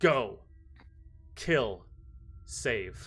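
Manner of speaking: big, large giant voice, curt and terse. Narrating a scene, the speaker voices a pointing figure in a large, deep voice. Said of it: "Points with his large, deep voice".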